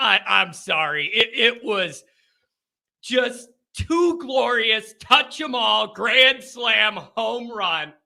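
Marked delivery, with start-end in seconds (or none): 0.0-4.9 talking while unable to stop laughing. Recapping a glorious weekend for Notre Dame, laughing while talking. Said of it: "I can't stop laughing".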